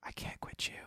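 close, hushed, soft breathy whisper. Retelling what a man said up close after the recording: imitating a whisper. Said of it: "he just looks up at me and he whispers".

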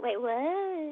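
put-on valley girl way of talking with drawn-out what. Repeating a catchphrase shared with a friend, a speaker uses a valley girl voice. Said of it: "I sounded like a valley girl when I said it".

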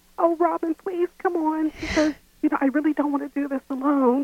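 put-on high, childlike little-kid pleading voice. Asked to demonstrate, retelling how she coaxed Robin to go out, imitating a childlike pleading voice. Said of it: "Can you imitate it so I get a feel for it?".

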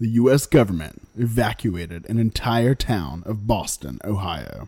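dramatic big-screen movie trailer narrator voice. Reading a documentary's trailer aloud on request, in a dramatic movie trailer voice. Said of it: "Do the voice".

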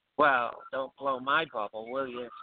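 light, put-on, a little sarcastic tone. Retelling a reply to a lottery post: imitating a sarcastic remark. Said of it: "a little sarcasm".

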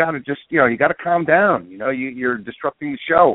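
plain

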